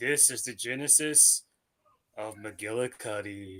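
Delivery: mock creepy voice, very quiet, low and hushed. Repeating for others exactly how he said it, imitating a creep's tone. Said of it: "You gotta say it like he did... He said it like a fucking creep".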